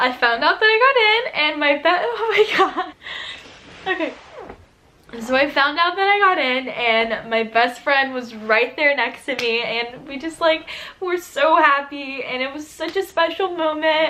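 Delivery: tearful, speaking while crying. Recounting finding out you got in, with your best friend beside you, crying. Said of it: "Stop, I'm crying".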